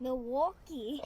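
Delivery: Minnesotan accent. Repeating the tool's name after being told: Minnesotan accent. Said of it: "you gotta say it like a Minnesotan".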